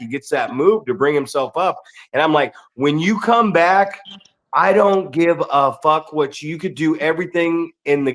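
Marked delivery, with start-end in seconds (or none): none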